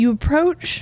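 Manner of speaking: voice aimed past the microphone, turned aside. Copying another player's voice as an improv warm-up: imitating Frankie. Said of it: "this is what Frankie does every time".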